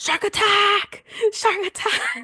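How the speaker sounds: acted, very high shrieked scream. Retelling a video of dancing with someone dressed as a shark: imitating a scream. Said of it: "with them screaming".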